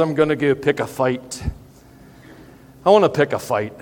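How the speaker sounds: bad, clumsy, mangled Scottish accent. Quoting a Braveheart scene, apologizing for ruining it: bad Scottish accent as Mel Gibson. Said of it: "please forgive me absolutely ruining the Scottish accent".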